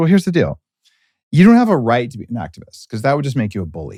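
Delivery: ordinary delivery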